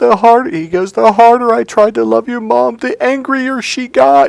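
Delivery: mock-tearful sobbing. Retelling what a crying man said between sobs, imitating someone sobbing. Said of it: "he just is sobbing and sobbing".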